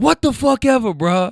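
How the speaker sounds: put-on hollered yell. Retelling an overheard argument, imitating the man yelling back at her: retelling a yell. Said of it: "He yells".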